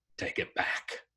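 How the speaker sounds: soft, hushed, sullen growl. A narrator reads the sullen charge refusing his caretaker, growling. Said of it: "he growled".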